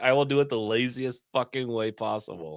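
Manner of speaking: open, weary, scornful disdain. Voicing the artist's thoughts about drawing lazily: imitating disdainful artist. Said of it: "You can tell he has so much disdain for doing it".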